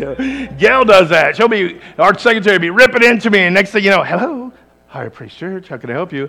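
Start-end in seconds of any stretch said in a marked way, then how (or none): 4.0-6.3 put-on secretary's phone-answering voice. Speaker imitates their secretary answering the church phone, imitating a phone voice. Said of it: "You got a phone voice".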